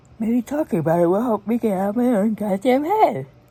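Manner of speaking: very loud speech through a yawn. Talking to viewers about something noticed, yawning while talking. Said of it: "Sorry, I'm yawning".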